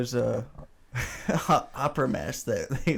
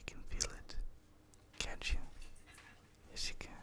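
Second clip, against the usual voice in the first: mock soft ASMR whisper, quieter. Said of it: "A S M R break over".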